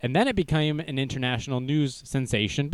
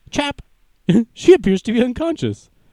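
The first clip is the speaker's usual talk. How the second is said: put-on Swedish accent, loud and high-pitched; 8 semitones higher, 6 dB louder than usual. Retelling a story, speaker voices two swedish passersby: swedish accent impression. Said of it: "That's how the Swedish talk".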